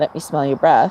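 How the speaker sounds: ordinary talk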